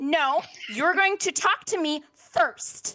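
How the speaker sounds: furious. Game master voicing a titanic woman confronting a player's character, angry. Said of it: "I'm angry and I'm Feywild's magic angry".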